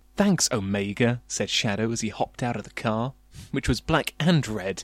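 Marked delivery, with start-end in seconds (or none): none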